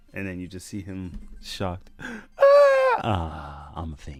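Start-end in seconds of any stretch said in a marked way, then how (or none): 1.9-4.2 very slow, drawn-out, swooping lady voice. Reading a comic aloud blind, voicing a shocked character in a lady voice. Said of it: "Don't laugh at my lady voice".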